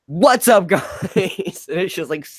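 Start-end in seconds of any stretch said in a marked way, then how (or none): 0.2-0.9 put-on, extremely loud, high-pitched, blaring voice. Retelling how the show's opening greeting sounded: imitating a super loud greeting. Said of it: "super duper loud".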